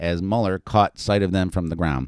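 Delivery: ordinary delivery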